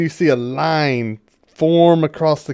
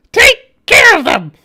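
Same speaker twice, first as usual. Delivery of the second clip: very high, very loud, shrill tiny creature voice; 9 dB louder than usual. Speaker describes a cake standing up and looking at you, then a little voice. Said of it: "you hear a little voice just like".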